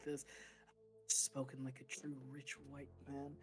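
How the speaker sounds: quiet muttering under the breath. Voicing a character before pulling out a gun: muttering under his breath. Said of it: "mutters under his breath".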